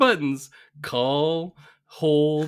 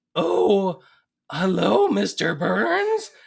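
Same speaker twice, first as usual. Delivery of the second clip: high, slow fake old lady voice. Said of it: "he has to pretend to be his mother".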